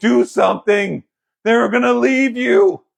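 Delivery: put-on high, raw, frantic, panicked little boy's scream. Voicing a panicked little boy's inner voice: acting a screaming panicked little boy. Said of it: "That was screaming".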